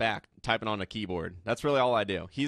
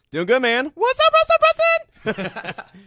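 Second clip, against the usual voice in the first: highest-pitched put-on voice, louder and slower; 11 dB louder than usual. A guest greets the host at the start of an interview, highest-pitched voice possible. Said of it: "In my highest pitch voice I can make today".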